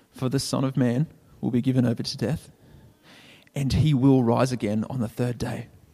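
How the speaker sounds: hushed whisper. Preaching, voicing what listeners would say at Jesus' tomb: whispering. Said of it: "and you'd whisper things like".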